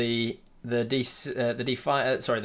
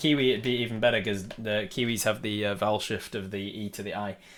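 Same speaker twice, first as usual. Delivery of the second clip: usual speaking voice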